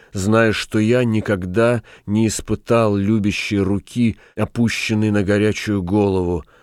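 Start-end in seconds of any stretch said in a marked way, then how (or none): none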